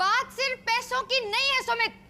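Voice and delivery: yelling in anger. Maya arguing with Sumit, who promises to get the money back: angry shouting. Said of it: "तो तुम चिल्ला क्यों रही हो?".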